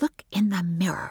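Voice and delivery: whispering. A woman replies to David; she whispered back. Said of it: "she whispered back".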